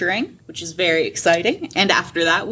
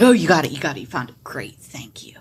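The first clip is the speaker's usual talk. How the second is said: eager half-orc gushing, fast and swooping; 3 semitones lower than usual. Voicing the half-orc buddy who runs over to the players: excited half-orc voice. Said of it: "He gets all excited".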